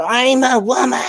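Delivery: very high-pitched shrieking, screaming cry. Describing men in protest videos caught by police, imitating a man screaming. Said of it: "And they start screaming".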